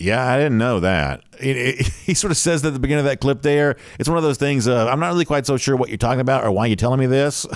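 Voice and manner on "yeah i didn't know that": mock deadpan, low-energy imitation, much slower pace. Describing how Kirby Smart begins a clip, imitate deadpan, low-energy Kirby Smart. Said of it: "sort of deadpan, kind of low-energy way".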